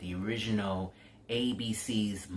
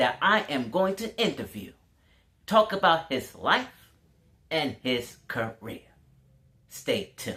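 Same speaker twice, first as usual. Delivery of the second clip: loud, pitched-up sportscaster delivery; 5 semitones higher, 6 dB louder than usual. Give the others a little bit of your impression of a late football broadcaster: Howard Cosell impression. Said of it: "let me give you a little bit of Howard Cosell impression".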